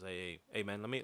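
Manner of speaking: mock stuttering, stammered speech. Speaker retelling a man confronting them about parking, imitating a stutter. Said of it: "he's like stuttering like that".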